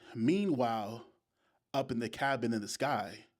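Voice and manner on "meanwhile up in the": ordinary delivery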